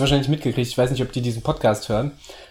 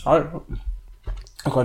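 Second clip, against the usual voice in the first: mouth full, quieter and slower; 2 semitones higher, 4 dB quieter than usual. A podcast co-host greeting at the start of an episode, talking with mouth full. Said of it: "jetzt habe ich gerade den Mund voll".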